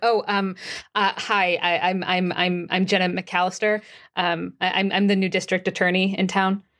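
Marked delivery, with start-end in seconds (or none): none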